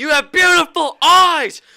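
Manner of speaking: high-pitched, shrill, very loud yelling. Acting out a dude suddenly yelling at him for money, mock yelling. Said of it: "if a dude just started yelling at me".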